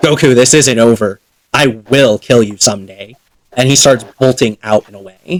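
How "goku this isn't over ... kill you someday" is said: growled through a snarl. Voicing Piccolo as he turns on Goku with a threat: snarling. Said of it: "kinda snarls at your direction".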